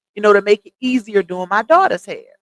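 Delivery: ordinary delivery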